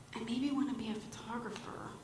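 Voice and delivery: soft, quick, timid, meek little voice. Retelling a friend's answer about what she wants to do, imitating a meek voice. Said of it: "she says with a meek voice".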